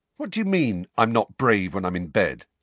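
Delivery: ordinary delivery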